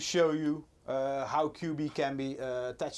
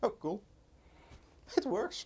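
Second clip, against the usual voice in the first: surprised, caught off guard, pitched up; 7 semitones higher, 4 dB quieter than usual. Checking that the capture setup works, sounding surprised. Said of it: "You sound surprised".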